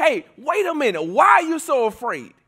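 fed-up, thoroughly annoyed, irritated tone. Retelling a Bible story, Jesus woken during a storm: imitating annoyed Jesus. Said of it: "Jesus is, like, so annoyed".

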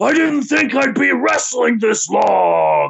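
high, rough voice with words long drawn out. Imitating a wrestler ordering at McDonald's: imitating Randy Savage's wrestling voice. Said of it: "What's wrong with your voice?".

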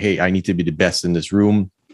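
ordinary delivery

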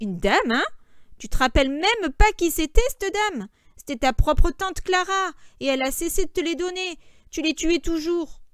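high, scornful, mocking, jeering tone. Narrator reads Georges answering Lenny, mocking. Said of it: "Georges se moqua".

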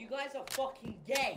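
worked-up, heated, high voice, half under the breath. A player who just lost the video game lashes out at the other players, heated. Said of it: "You sound a little heated".

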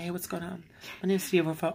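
soft, high-pitched, hushed voice. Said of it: "I used to kinda talk higher like this".

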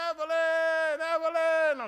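high, loud screaming call projected far. Retelling calling for someone across the house, retelling screaming a name. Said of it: "And I start screaming".

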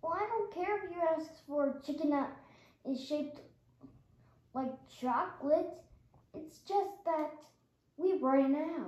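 worn-out, sleep-starved voice, halting exhausted delivery. A worker, asked if he's sleeping on the job, answers sounding exhausted. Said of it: "you feel like you haven't slept in a year".

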